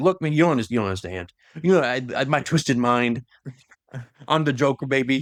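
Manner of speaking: usual speaking voice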